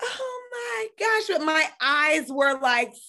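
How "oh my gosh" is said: high, forced, fake-happy excited exclamation. Retelling the reply to the doctor's news: imitating put-on happiness. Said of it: "let me just pretend that I'm happy".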